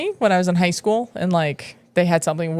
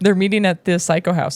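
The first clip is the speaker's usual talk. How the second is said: plain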